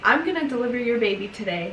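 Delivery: ordinary delivery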